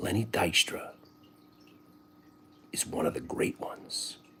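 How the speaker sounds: grave, confiding, hushed, dead-serious whisper. Retelling an interview, imitating Jim Cramer whispering. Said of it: "So he gets the whisper voice on".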